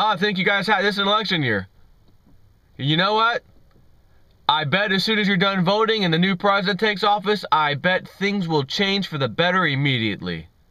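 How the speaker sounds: high, cheery, thick and knowing heavy sarcasm. Quoting a comedian's old show about the elections, retelling a sarcastic remark. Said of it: "Being very sarcastic".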